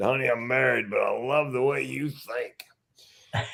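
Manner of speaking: put-on slow, pained voice. Speaker retelling what he told a woman during his heart attack, talking through pain. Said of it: "Through the pain".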